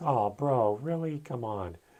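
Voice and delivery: heavy sarcasm, slow and drawn out. Retelling a brother's reply over the phone: imitating a sarcastic tone. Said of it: "In such a sarcastic tone".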